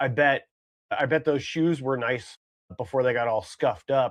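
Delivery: normal talking voice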